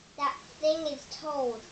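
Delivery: plain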